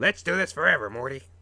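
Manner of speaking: very loud, high, terrible cartoon scientist voice. Talking about a show's episodes, the speaker does a terrible Rick impression. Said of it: "That was a terrible Rick impression".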